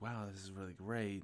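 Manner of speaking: ordinary talk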